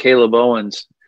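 put-on heavy New York accent, words blurred into one. Retelling how a mentor said the name: imitating a thick New York accent. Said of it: "a sort of thick New York accent".

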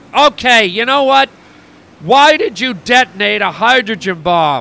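heated, irritated, angry and pointed. Confronting a man who has been insulting him, loud voice. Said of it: "If you could lower your voice".

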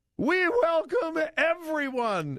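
mock, piercing, very high-pitched, shrill screech. Speaker mocking a woman's words to listeners, imitating her screaming. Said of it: "She is screaming".

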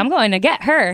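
plain

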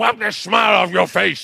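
mock drill sergeant bark, rough and high. Describing being yelled at while unable to stop laughing, imitating a yelling drill sergeant. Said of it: "when the drill sergeant's yelling at you".

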